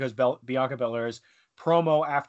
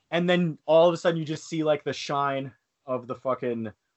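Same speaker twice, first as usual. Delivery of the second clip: normal talking voice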